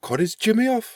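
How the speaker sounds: put-on very high voice, Hartlepool accent. Reacting to the story of the Hartlepool monkey: Hartlepool accent. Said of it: "Quite a good Hartlepoolian accent".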